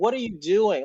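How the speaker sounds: mock screamed outburst, high. Retelling a race, imitating screaming at the tv: imitating someone screaming. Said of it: "I was screaming at my T V".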